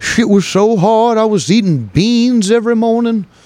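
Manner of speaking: high Southern preacher voice with Southern accent and cadence. Speaker ranting about the working man, slipping into a southern preacher voice. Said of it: "my fucking southern preacher voice there".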